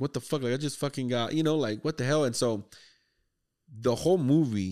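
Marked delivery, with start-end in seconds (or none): 0.0-2.2 mock panicked freak-out, fast and rattled off. Retelling a movie scene, imitating someone freaking out. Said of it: "fucking freaking out".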